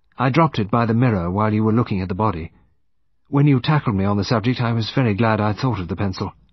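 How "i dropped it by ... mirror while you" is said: usual speaking voice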